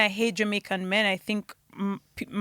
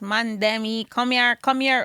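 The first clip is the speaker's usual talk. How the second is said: put-on Toronto guy accent, slow; 3 dB louder than usual. Showing how the guys Toronto girls go for talk: imitating a Toronto guy. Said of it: "He talks like this".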